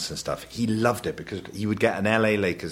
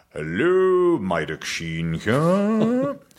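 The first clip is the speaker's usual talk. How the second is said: rather grand put-on posh voice, slow and drawn out; 9 semitones higher, 4 dB louder than usual. Speaker imitates their dad answering the phone, imitating Maidoc Sheen's posh voice. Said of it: "he puts on a rather posh voice".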